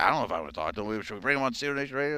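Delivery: fast, nervous, hesitant, rattled-off doubt.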